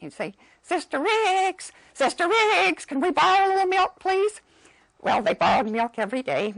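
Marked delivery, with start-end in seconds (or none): 0.6-4.4 put-on very high, silly little-boy voice. Retelling what one of the visiting boys would say, in a high, funny voice. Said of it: "this high, funny voice".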